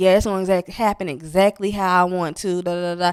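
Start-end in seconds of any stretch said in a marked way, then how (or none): none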